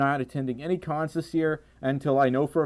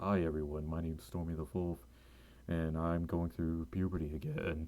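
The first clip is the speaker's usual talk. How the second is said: put-on bass voice, very low and very quiet; 9 semitones lower, 12 dB quieter than usual. Speaker showing off how deep their voice is today; extra deep voice. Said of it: "Have you noticed my voice is really deep today? Like, I can do this".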